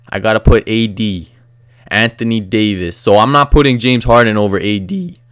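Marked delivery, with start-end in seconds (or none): 2.9-5.1 voice cracking. Ranking basketball players, the speaker's voice cracks mid-sentence: voice cracking. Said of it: "my voice just cracked".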